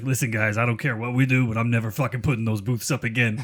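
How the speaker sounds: put-on heavy Chicago accent. Retelling what a volunteer said at teardown, in Tom Newsom's heavy Chicago accent. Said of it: "the fucking big heavy Chicago accent".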